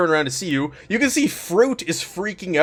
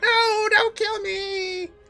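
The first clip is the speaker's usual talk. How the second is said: tiny, very high, shouted little voice. Describing a commotion to Zenny in the game; little voice shouting out. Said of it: "you hear another little voice shout out".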